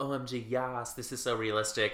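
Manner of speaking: usual speaking voice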